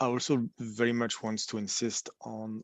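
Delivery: speaking too quietly. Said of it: "can you speak up a bit?".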